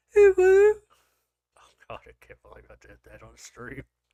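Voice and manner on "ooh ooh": put-on, very high, loud girly squeal. Listing types of voices on stream, doing a put-on girly voice. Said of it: "the girly voices, which are like".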